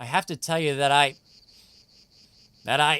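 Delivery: faltering, hesitant, trailing off into nothing. Starting to tell another speaker something before a fight, voice trailing off. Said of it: "Your voice is trailing off".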